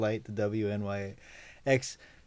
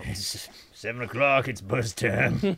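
funny put-on old man character voice. Speaker addresses the group in a put-on old man voice. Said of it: "when you do that voice, all I can think of is the old guy in Home Alone".

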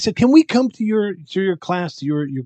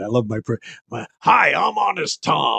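put-on pirate voice, slower pace. Recalling his first line in a show, the speaker performs an Honest Tom pirate voice. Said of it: "I don't really talk like this".

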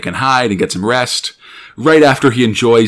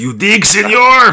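very high-pitched put-on Mexican bandit accent; 10 semitones higher, 4 dB louder than usual. Describing a tobacco product that has an accent, voicing it in a mexican bandito accent. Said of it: "it's got a muy bueno Mexican bandito accent".

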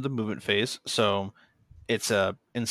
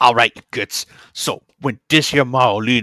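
loud, clumsy, badly done orc voice; 9 dB louder than usual. Podcast host reading a game rule aloud, doing a bad orc voice. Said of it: "trying to talk like an orc".

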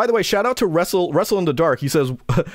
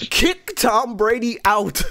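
shocked outburst, voice breaking high with disbelief; 7 semitones higher than usual. Reacting to the mayor kicking a player out of a park for practicing football, voice cracking in shock. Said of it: "You heard my voice crack".

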